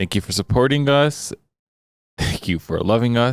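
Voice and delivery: talking with laughter breaking through the words. Thanking listeners for their support, laughing while talking. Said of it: "Sorry for laughing".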